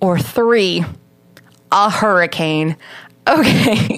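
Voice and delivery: very slow speech through laughter, words drawn out. Listing possible explanations for an incident, laughing. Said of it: "I'm like so close to the mic and laughing like that".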